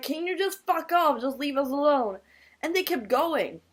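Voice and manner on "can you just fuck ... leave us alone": angry, pushy, aggressive and hostile tone. Recounting a drunken run-in with people insulting them, quoting their own words: retelling screaming at them. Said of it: "I started screaming at them".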